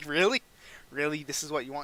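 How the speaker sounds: normal talking voice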